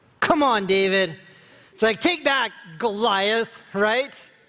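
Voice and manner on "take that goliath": cocky, defiant tone with attitude. Imitating David taunting Goliath: defiant with attitude. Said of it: "with a lot more attitude than I just said".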